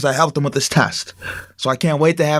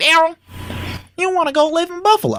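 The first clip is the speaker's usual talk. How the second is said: put-on little, very high old grandma voice. Retelling what his grandma said to him, in a high-pitched old grandma voice. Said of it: "in that little high pitched, you know, old grandma voice".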